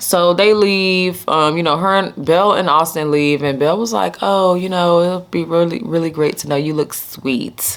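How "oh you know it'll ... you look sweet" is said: put-on condescending tone. Retelling a character's parting words as they leave: imitating condescending tone. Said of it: "in her little condescending way".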